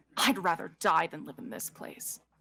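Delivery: disdainful, dismissive scoffing. A role-player voicing his character's reply in an argument, scoffing. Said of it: "He scoffs".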